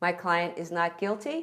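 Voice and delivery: guilty lifted with a questioning rise. Showing how a lawyer's line to a judge sounds: rising pitch on "guilty". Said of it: "Sounds like a question".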